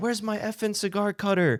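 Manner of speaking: high-pitched put-on scream, barked out. Retelling a rich client yelling at his personal assistant: imitating someone screaming.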